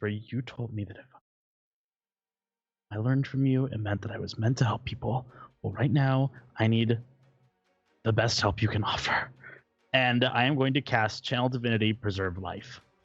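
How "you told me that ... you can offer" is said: whisper in a character voice. Voicing Dara on his turn, clutching his amulet, whisper under your breath. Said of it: "he's just going to whisper".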